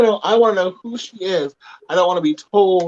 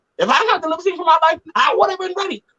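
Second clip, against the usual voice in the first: boisterous, joking, boastful tone. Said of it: "she was very boisterous".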